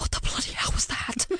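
whispered, breathless gasp.

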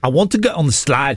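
fake, put-on South African accent. Doing a phrase in an accent for an accent game: put-on south african accent. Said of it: "My South African phrase is".

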